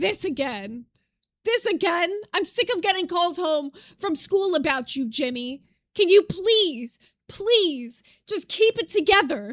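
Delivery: mock fed-up, disappointed, exasperated voice. Imitating how a video creator sounds by the end: imitating a fed-up disappointed mother. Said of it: "she will start sounding like a disappointed mother who's just done with her child".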